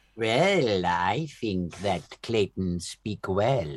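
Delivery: put-on, fake Welsh accent. Answering the question put to the great sage, in a put-on Welsh-sounding accent. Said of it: "Are you from Wales?".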